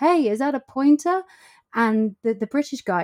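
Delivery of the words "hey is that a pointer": high, mock hollered shout. Retelling how a man wound down his window and called out to them: retelling a man's shout. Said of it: "wound down his window and shouted".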